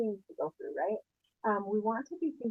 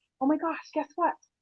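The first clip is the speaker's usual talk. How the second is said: eager gossipy tone, high, loud; 6 semitones higher, 6 dB louder than usual. Showing how to sound when calling someone up with news: excited, like sharing gossip. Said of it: "You want to sound like you have gossip".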